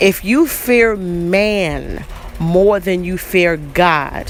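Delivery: very slow, drawn-out delivery. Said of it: "I'ma say it real slow so y'all can get it".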